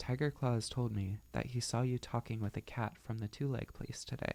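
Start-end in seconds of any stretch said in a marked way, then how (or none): none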